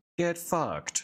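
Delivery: high robotic voice. Voicing a commanded robot landing a punch: Vasco robot voice. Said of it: "you just hear the robot say in his voice".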